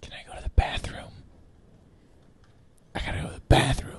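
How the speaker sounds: hushed whisper, under the breath. Interrupting the recording with a request, whispering. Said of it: "Why are you whispering?".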